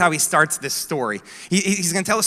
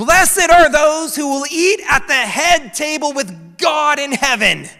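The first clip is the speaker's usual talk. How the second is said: put-on high, loud, drawn-out shout; 8 semitones higher, 5 dB louder than usual. Retelling a guy in the back calling out: imitating someone yelling out. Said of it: "he yells out".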